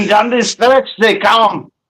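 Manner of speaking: bad Russian accent. Asked to do the race in a russian accent, a failed russian accent. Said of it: "That did not sound Russian".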